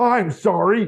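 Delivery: mock voice-assistant voice, shouting. Acting out a voice assistant shouting back at a shouting user: imitating Alexa shouting. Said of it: "Alexa starts shouting back at me".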